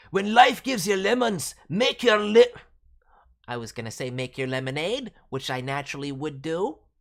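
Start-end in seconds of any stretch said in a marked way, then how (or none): 0.1-2.5 put-on loud, strong Scottish accent. Voicing a fan-made Scottish wolf character, aiming to avoid sounding Irish: strong Scottish accent. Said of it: "Alpha is Scottish, born and raised. The accent is strong".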